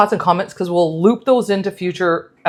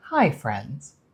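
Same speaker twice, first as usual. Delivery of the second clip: put-on soft, gentle kids' TV host voice; 6 semitones lower, 8 dB quieter than usual. Joking about doing the whole episode this way: Fred Rogers voice. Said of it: "Like Fred Rogers".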